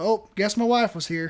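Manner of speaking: utterly casual, unbothered, offhand tone. Retelling what a man said after his wife wrecked the lobby: imitating a nonchalant voice. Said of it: "with the most, like, nonchalant voice ever goes".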